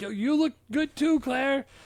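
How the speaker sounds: thrilled, excited delivery, squeaky and very high-pitched. Retelling a movie scene, quoting the character's reply: imitating Paul Reiser excitedly. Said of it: "he gets so excited".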